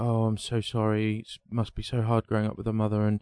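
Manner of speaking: normal talking voice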